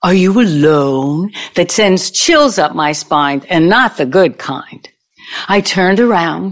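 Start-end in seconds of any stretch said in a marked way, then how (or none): 0.0-1.3 put-on German accent, slower. Retelling what a guy on the frat house dance floor asked her, German accent. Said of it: "I heard the German accent".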